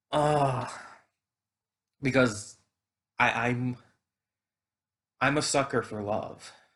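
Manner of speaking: choked up, teary voice on the edge of tears. Recalling a character's death in a story, getting teary-eyed. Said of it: "I'm getting teary eyed even thinking about it again".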